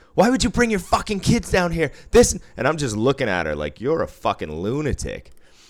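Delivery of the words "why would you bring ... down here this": losing-it frantic rant, very high and rushed. Retelling what a woman said to him after coming out, imitating a frantic rant. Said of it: "she's losing her mind".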